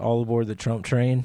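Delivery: ordinary delivery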